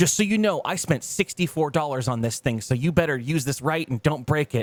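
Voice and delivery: put-on yelling man's voice. Retelling how Bobby yelled at the grandmother, imitating Bobby yelling. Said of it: "he's like yelling at their grandmother".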